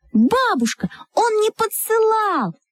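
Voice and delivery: shouting together. Her grandson's friends answer an angry grandmother, shouting together. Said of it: "Закричали мы".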